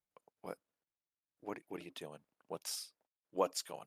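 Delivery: speaking low. Stepping closer so only Sly can hear, speaking in a lowered voice. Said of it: "and I will lower my voice".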